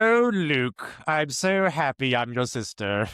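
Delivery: odd, high, very slow, dragged-out weird voice. Joking with the other speaker about the film line: weird Maid Marian voice. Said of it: "this weird voice that comes out of nowhere".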